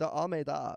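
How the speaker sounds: imitated female voice with accent. Imitating a woman answering interviewers: imitating her accent. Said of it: "Your impression of her is so good".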